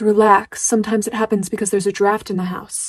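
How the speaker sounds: ordinary talk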